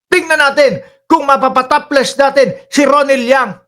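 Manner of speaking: firm, hard, very manly delivery. Imitating how Roque said this line: Roque's firm, very manly voice. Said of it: "Lalaking lalaki pagkakasabi ni Roque".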